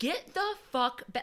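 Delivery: loud, high-pitched yelling. Retelling how the Coast Guard man yelled at the captain over the phone: imitating someone yelling. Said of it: "he starts like yelling at him".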